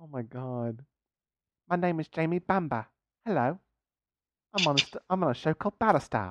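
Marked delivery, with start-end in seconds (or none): 1.7-6.3 quieter put-on London accent. Introducing himself as an actor on Battlestar, in a London-accent Jamie Bamber impression. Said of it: "You talk like you're from London".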